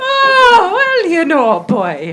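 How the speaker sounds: put-on Cockney Irish accent. Answering a remark on the accent, still in put-on cockney irish accent. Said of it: "You have a Cockney Irish accent".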